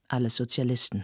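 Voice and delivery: ordinary delivery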